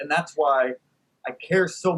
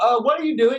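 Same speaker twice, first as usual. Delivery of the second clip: mock, high, yelled heckling; 7 semitones higher, 4 dB louder than usual. Retelling a bus driver's heckle: imitating someone yelling. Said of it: "yells out".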